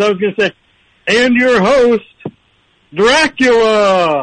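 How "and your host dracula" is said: very slow, drawn-out announcer voice. Introducing a movie monster as a TV host: Don Pardo impression. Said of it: "did you just play a clip of Don Pardo?".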